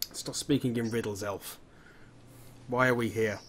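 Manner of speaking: angry character voice. In an actual play, voicing Hawk demanding answers from the elf, quite angry. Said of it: "He gets somewhat shocked, / quite angry about it".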